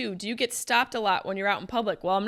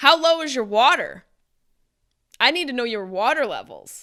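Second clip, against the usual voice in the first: raised, swooping voice full of bafflement; 3 semitones higher, 4 dB louder than usual. Responding to a listener's question, speaking with a raised voice. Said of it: "You've made me raise my voice".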